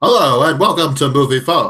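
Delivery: automated, recorded phone-menu style announcer voice. Told you would have been great at voicing Moviefone, play along in the Moviefone voice. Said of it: "doing the voice for Movie Phone".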